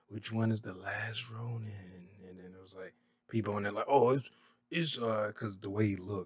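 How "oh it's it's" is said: slow, put-on, unconvincing New York accent. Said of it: "Why am I sounding like the teacher?".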